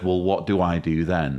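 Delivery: ordinary talk, nothing marked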